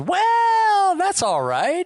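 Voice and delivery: "well" stretched out, pitch swooping up high. Retelling a scene, the speaker gives Harry's reply in a Dad Parker voice. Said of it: "in the most Dad Parker voice".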